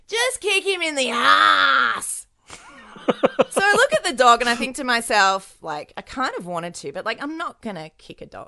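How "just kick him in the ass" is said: distant, high-pitched yell with "ass" stretched long. Retelling what a pit bull's owner yelled across a kiddie playground, imitating a distant yell. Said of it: "owner yells back across the kiddie playground".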